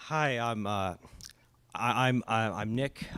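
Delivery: a little nervous, stammering and halting. Online friend introducing themself when invited to speak, a little nervous, stammering. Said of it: "sorry, a little nervous".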